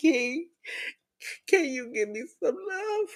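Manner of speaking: mock full-on crying, high and tearful. Retelling asking a nephew for love with tears running: imitating her own past crying. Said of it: "could be full on face crying".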